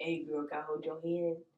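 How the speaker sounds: very low, deep, hushed, jokingly earnest delivery. Imitating a friend asking on a date: imitating Keith, jokingly serious. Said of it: "it's like jokingly serious".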